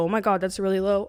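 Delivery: ordinary talk, nothing marked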